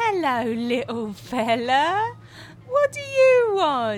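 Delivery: condescending, patronizing tone with high sing-song pitch. A store clerk greets the next customer in line in a condescending tone. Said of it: "in that condescending tone".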